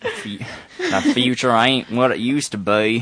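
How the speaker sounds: put-on Southern accent. Asked by the others to show a southern drawl, saying a quote in southern drawl. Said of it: "Say it in Southern Drawl".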